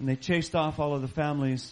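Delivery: plain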